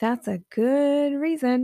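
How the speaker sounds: heavy, scornful, very mocking tone. Quoting how an author answers his own excuses in his book, imitating a very mocking tone. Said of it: "like very mockingly".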